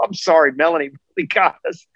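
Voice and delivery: put-on laughing. Retelling own words on air during the next race: imitating own past laughing. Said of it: "I was still laughing on the next race".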